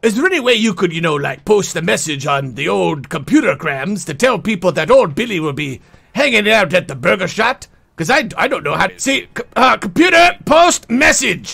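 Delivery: full pirate sailor character voice. The speaker plays Billy the Pirate, asking for help posting a message, in Billy the Pirate voice. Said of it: "Me name is Billy the Pirate".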